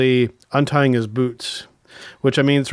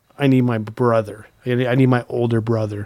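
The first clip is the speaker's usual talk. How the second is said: imitated emotional voice close to tears; 2 semitones lower than usual. Retelling someone's words in the ring: imitating an emotional near-crying voice. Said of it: "Cody's voice get very emotional, almost to the point of crying".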